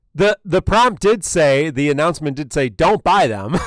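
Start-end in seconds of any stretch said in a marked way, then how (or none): 2.7-3.6 raised, emphatic voice. Quoting an announcement about not buying: mock raised voice. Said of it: "no need to raise your voice".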